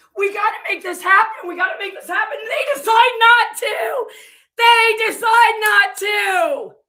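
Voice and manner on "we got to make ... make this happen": put-on tearful, sobbing voice, crying repeatedly. Retelling a phone call where a caller pleads: imitating Nick Owiak crying. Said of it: "supposedly calls him crying, like".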